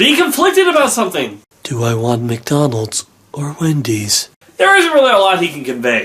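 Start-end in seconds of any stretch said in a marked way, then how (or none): 1.6-4.3 low, drawn-out monotone. Showing that Hal has no range when told to be conflicted: HAL monotone impression. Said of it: "that monotone tone of voice".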